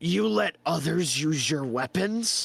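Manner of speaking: disgusted character voice. Voicing Krug after hearing others use the weapons: Krug purely disgusted. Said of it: "he becomes purely disgusted, and he goes".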